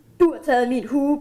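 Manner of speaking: usual speaking voice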